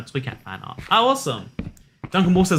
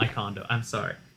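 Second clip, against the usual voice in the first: ordinary talk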